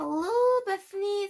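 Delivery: weird, unnatural, high-pitched put-on voice. Narrator voicing the beast calling to bethany, strange high-pitched voice. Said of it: "said the beast in a strange, high-pitched voice".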